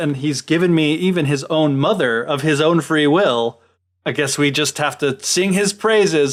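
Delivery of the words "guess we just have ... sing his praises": ordinary talk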